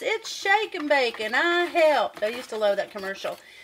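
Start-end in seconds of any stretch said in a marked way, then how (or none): 0.0-2.2 slow, small girl's put-on southern drawl. Retelling a little girl's line from a commercial: southern accent. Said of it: "the little girl in her southern accent says".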